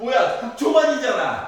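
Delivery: loud, high, startled outburst.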